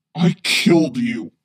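very low, loud growl. Vader whirls around to find no one there and answers the voice, growling. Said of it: "he growls".

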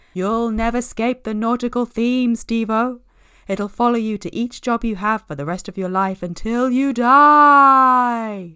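booming, loud, high, spooky ghost voice. Robin teases steve with a thrift-store tie, in a spooky voice. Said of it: "Robin had said in a spooky voice".

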